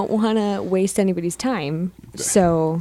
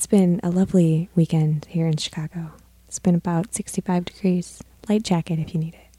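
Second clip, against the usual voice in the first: read like a public radio host. Signing off at the end of the show, in a soft NPR voice. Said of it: "a little soft NPR voice".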